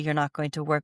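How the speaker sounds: ordinary delivery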